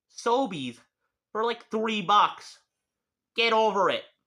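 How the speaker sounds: angry ranting. Ranting about kitchen shears and vegetable peelers, angry ranting. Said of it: "sounds like I'm angry at you".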